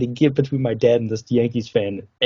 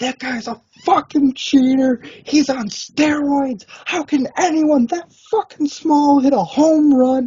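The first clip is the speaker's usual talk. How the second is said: mock screaming rant, very high pitched. Speaker retells what a man was screaming: imitating a guy screaming. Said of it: "this guy's screaming, yelling".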